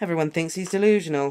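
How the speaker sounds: ordinary delivery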